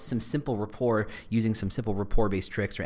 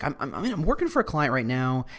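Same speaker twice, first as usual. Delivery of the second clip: ordinary talk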